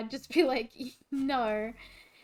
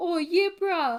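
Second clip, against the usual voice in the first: put-on Islander accent; 6 semitones higher, 6 dB louder than usual. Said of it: "they would have Islander accents 'cause they would be trying to copy".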